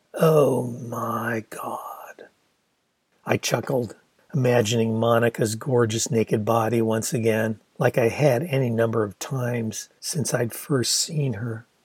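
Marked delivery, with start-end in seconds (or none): 0.2-2.3 slow, weighty, emphatic, "my" drawn out. A woman in the story repeats her exclamation, slower and with emphasis. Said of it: "Then slower and with emphasis".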